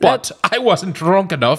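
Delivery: put-on British-accented voice. Reading a post aloud as asked, in a British accent. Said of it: "read it like a British person".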